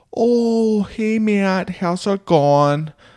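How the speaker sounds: put-on heavy South Dakota accent, very high. Imitating a nice lady you knew up in South Dakota, thick South Dakota accent. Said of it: "she had a very thick accent".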